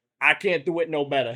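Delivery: put-on Brooklyn accent laid on thick. Retelling being a mascot when kids said the quack wasn't a real duck, full Brooklyn accent. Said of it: "Full Brooklyn accent".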